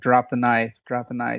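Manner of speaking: normal talking voice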